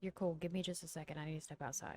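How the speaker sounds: character voice in a whisper. Game master voicing Seneca answering a phone call, whispering. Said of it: "he answers in a whisper".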